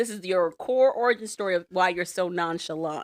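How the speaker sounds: ordinary talk, nothing marked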